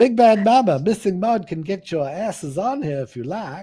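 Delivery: very loud, high, attempted Southern belle accent. Streamer calling chat viewers by name, in an attempted Southern belle accent. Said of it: "my American attempt to be American Southern Belle".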